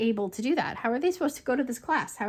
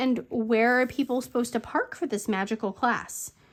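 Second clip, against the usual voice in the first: normal talking voice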